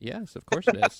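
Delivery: heavy sarcasm, very high. Confirming to a player that the hero point is real: sarcastic tone. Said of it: "You sound very sarcastic".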